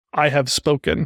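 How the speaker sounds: ordinary talk, nothing marked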